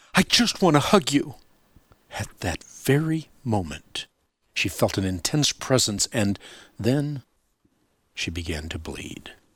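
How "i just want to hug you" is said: high, sudden, instinctive blurt. Kathy answers the little girl saying goodbye, blurting it out. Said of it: "Kathy blurted out".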